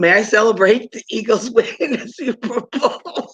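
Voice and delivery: high, laughing, words breaking into laughter. Reading a joke aloud from a book after messing it up, laughing while reading. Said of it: "I'm sorry, I'm laughing".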